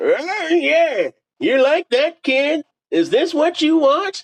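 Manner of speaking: put-on yelling in gargled, nasal old voice. Reading a story aloud, voicing an old neighbor: yelling in a gargled nasally old voice. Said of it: "yelled in his gargled, nasally old voice".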